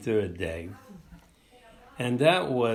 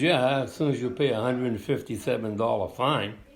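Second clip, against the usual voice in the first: ordinary talk, nothing marked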